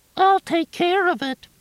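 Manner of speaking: very high, mocking falsetto squeak. Narrator reading Junior mimicking Nancy Dunbar, in a mocking falsetto. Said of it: "Junior mimicked in a falsetto".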